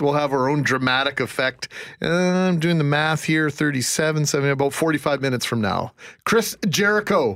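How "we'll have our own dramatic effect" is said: normal talking voice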